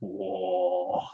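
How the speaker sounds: quiet, creaky, awestruck "whoa".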